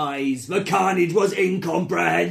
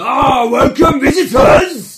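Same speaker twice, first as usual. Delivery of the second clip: huge, very loud, angry booming man's voice; 7 semitones higher, 12 dB louder than usual. Voicing a world leader who greets visitors, in a Brian Blessed-style voice. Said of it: "I only have one big angry man voice".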